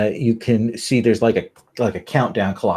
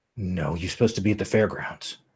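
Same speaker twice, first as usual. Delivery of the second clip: deep voice, lower and quieter; 2 semitones lower, 6 dB quieter than usual. In an acted scene, arguing with another character, in a deep voice. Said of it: "this deep voice says".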